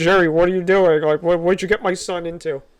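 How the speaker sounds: mock, acted-out panicked voice. Retelling his mother panicking outside the house at jerry; imitating panicked mother. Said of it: "really panicking and looking at Jerry like".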